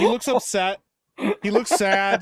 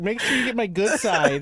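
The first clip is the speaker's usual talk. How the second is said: usual speaking voice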